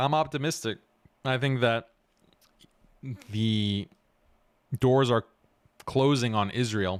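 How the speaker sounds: speech broken by hiccups. Answering a question about the outlook, hiccuping. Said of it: "I have the hiccups".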